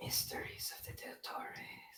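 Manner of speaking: spooky whisper, slow and soft.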